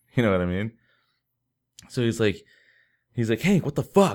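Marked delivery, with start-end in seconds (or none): 3.5-4.2 mock hollering, high, raised yell. Retelling a story, the speaker quotes his buddy yelling at Hank: retelling a yell.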